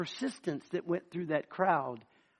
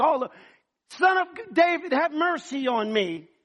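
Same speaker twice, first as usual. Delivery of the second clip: acted, belligerent, insistent hollering, pitched up; 8 semitones higher, 5 dB louder than usual. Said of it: "begins to be extremely belligerent".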